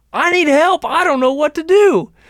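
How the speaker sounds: very high, sudden yell. Retelling how a man at the lake yelled for help: retelling a yell. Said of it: "all of a sudden he yells again".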